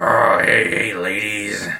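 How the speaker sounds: slow, husky, raspy, sexy voice. Imitating another speaker's voice while greeting ladies: imitating a raspy, sexy voice. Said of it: "raspy, sexy, succulent voice".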